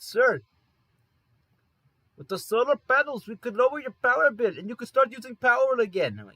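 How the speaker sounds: put-on thick, heavy Indian accent, very high and loud. Retelling a phone call, the speaker mimics the supervisor pitching solar panels: thick Indian accent. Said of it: "the thickest Indian accent I've heard".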